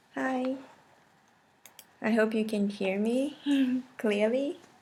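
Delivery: soft, hushed talk. Parent talking while their son naps nearby, talking quietly. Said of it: "I'm talking quietly because my son is taking a nap".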